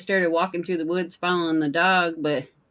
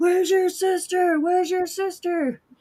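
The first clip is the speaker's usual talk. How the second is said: screamed out, very high-pitched call; 12 semitones higher than usual. Retelling hearing a lady screaming through the woods: imitating a lady screaming. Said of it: "I heard this lady screaming".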